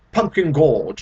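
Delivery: put-on British narrator voice. Describing a narrator, the speaker imitates a thick British accent. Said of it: "or like this".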